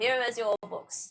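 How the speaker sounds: pompous, self-important character voice. Voicing a shopkeeper who hands over books: pompous character voice. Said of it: "It was a pompous asshole".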